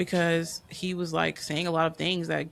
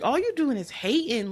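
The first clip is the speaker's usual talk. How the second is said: put-on, high-pitched hollering; 8 semitones higher than usual. Retelling own reaction while watching the movie: imitating yelling at the screen. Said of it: "finding myself yelling at the screen".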